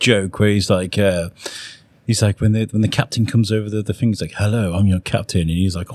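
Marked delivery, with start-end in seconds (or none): 4.3-5.4 put-on posh voice. Retelling a comedy joke, captain greeting over the speaker: imitating a posh captain. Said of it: "that's posh, isn't he?".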